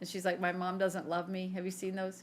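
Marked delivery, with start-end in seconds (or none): 0.4-1.5 mock crying, a woman's sobbing voice. Retelling a meme someone sent, imitating the crying lady in it. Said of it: "the lady crying".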